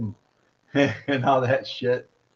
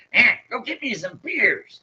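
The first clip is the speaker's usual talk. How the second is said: high-pitched put-on character voice; 9 semitones higher than usual. Imitating the McKenzie brothers' dad asking for beers: Yosemite Sam voice. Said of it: "the McKenzie's brothers' dad sounded like frickin' Yosemite Sam".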